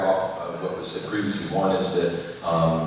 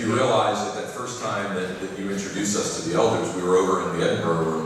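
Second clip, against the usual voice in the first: ordinary talk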